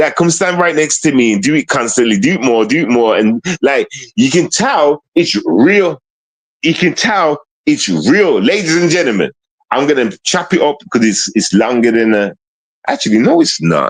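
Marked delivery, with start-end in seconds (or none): none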